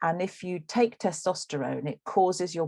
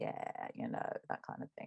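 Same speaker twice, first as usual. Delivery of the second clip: very quiet, breathy, creaky vocal fry; 15 dB quieter than usual. Explaining how women's speech is criticized, demonstrating creaky voice. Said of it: "this this sort of voice like this".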